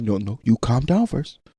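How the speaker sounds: very soft, low, hushed, real calm tone. Showing how to talk to her when she acts up, real calm. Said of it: "so you talk to her real calm too".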